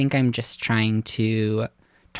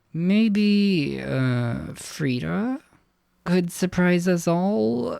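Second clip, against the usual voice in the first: words forced through clenched teeth, pitched up; 7 semitones higher than usual. A character in the story speaks up after talking about family, through gritted teeth. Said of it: "And then through gritted teeth".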